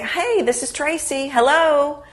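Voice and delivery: smiling friendly voice. Showing how to answer a phone call: smile in your voice. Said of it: "you want to have a smile in your voice".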